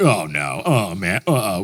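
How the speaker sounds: very slow, uneasy, nervous fretting. Retelling inner thoughts during turbulence: imitating own nervous worry. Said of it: "I get nervous".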